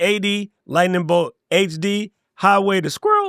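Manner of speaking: ordinary delivery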